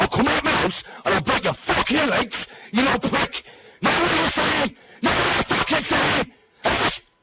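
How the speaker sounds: enraged, rage-filled, furious shouting. Angrily threatening someone who insulted him and picked a fight online, telling him where to find him. Furious shouting. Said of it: "stop shouting".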